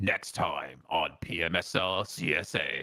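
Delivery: pretty low voice. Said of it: "Was that pretty deep?".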